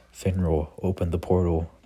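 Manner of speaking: ordinary talk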